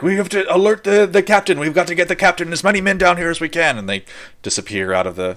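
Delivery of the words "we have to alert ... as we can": very high, urgent yell that carries far. Voicing a man ducking away to alert the captain: yelling. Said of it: "You hear him yelling".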